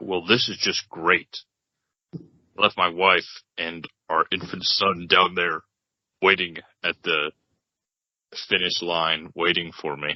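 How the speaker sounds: deep, low character voice. Playing Brett, stuck on a stalled ride, left his wife waiting: low voice as Brett. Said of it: "why is Brett's voice so low?".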